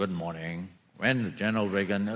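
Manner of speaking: dull, low and quiet droning voice. Before reading a speech to the audience, the speaker mimics Churchill: dull Churchill voice. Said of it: "Churchill has this very dull voice".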